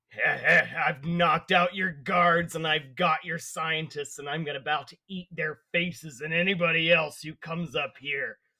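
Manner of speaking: menacing growl heard through a radio. Speaking in character into a captured radio, threatening the guards: growling into a radio. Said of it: "I growl into the radio".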